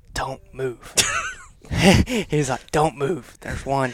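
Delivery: put-on very serious voice. Reenacting what Tyler told them during the moment, in Tyler's super serious voice. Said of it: "Super serious voice".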